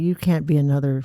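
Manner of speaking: ordinary delivery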